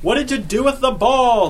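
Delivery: shrill, loud screaming voice. A baseball pitcher turns on his catcher mid-play: screamed. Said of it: "The pitcher screamed at the catcher".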